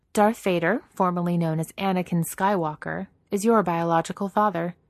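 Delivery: ordinary delivery, nothing marked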